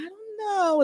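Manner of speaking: small, sweet-sounding little voice. Retelling inviting a woman onto the show, imitating Miss Monica's sweet little voice. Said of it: "That sweet little voice".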